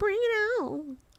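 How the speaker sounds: squeaky, very high-pitched, mocking, taunting voice. Teasing the other speaker by repeating their line: imitating a high-pitched voice. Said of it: "He's like".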